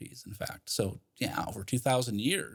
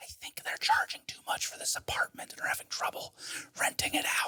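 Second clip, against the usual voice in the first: breathy, hushed whisper under the breath. Speaking while people talk outside the door, whispering. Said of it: "I'm just whispering because they're outside my door".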